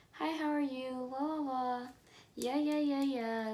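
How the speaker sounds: small, polite customer service voice. Retelling greeting him at work the first time they talked, in a customer service voice. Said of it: "My little customer service voice".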